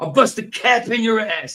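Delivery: very high, loud put-on movie-cop American accent. Showing an American accent learned from cops-and-robbers movies: put-on American accent. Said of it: "my American accent's the same as anybody else".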